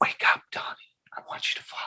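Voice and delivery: breathy, very hushed, barely voiced whisper. Recreating the different takes of a line from a film: imitating own whispered take. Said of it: "I did a whisper".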